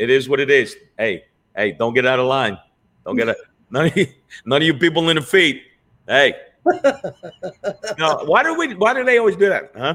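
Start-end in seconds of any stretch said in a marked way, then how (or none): 1.0-6.4 animated street-tough mobster voice, swinging pitch. After being praised for an imitation, doing a Goodfellas mobster voice. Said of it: "I've been watching a lot of Goodfellas".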